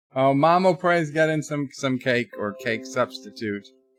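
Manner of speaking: plain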